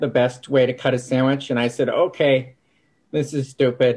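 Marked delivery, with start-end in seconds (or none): none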